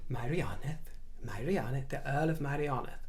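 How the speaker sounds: hammy, over-the-top Welsh accent, said softly. Trying out how to say the earl's title, in a hammy welsh accent. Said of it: "a sort of hammy Welsh accent".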